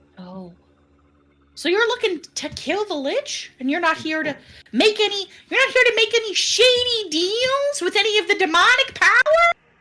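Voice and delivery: annoying, grating, shrill, very high, very loud voice. Voicing a character questioning players who want to get rid of Strahd, in an annoying voice. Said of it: "guy with the annoying voice that we've been hearing".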